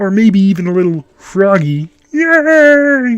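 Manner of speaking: "yay" stretched out, high-pitched and loud. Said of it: "my Kermit impression".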